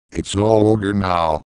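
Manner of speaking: plain reading voice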